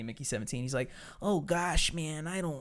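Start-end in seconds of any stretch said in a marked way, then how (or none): 1.2-2.6 soft, timid, wimpy put-on American voice. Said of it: "this is my impression of Mickey".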